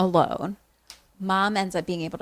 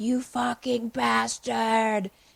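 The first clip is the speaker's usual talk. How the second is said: odd, overly precise, put-on American accent; 4 semitones higher than usual. Retelling a TV scene where a character yells at the camera, in a weird American accent. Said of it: "in his mm. weird American accent".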